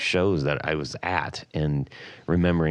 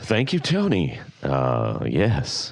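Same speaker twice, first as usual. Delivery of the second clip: very slow, smooth, swooping radio-host delivery; 2 semitones lower than usual. Thanking Tony, speaking in a radio voice. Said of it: "With my radio voice".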